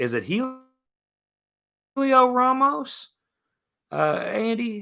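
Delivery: very high, rising falsetto, word drawn out. Speaker asks someone who they are looking for: falsetto pitch. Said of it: "I didn't mean to go into falsetto pitch".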